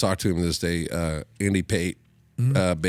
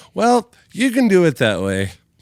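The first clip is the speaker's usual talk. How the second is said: play-acted, loud, swooping, smug know-it-all tone; 12 semitones higher, 8 dB louder than usual. Retelling what a bass player used to say: imitating a smart-ass tone. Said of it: "kind of a smart ass".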